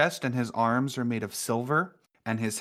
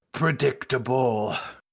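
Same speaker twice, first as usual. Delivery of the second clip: stone golem character voice. Voicing an awakened golem speaking to the party: voicing a golem. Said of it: "He looks over at you ... and he just".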